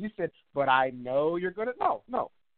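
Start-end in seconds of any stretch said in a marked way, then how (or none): 0.5-1.7 mocking altered sing-song tone. Quoting the other speaker's words back: imitating a mocking altered tone. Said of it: "this is what you said".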